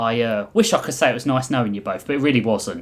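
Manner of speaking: ordinary delivery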